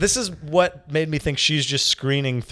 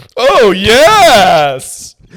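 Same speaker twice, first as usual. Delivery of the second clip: over-eager put-on character voice, very loud; 8 semitones higher, 15 dB louder than usual. Redoing a take in character, answering whether he wants a relationship. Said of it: "if you talked like that".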